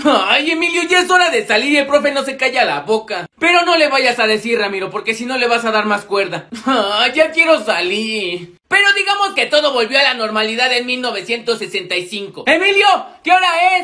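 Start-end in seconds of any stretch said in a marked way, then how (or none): 12.5-13.8 loud shouting. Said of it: "¿Por qué me gritas si estoy al lado de ti?".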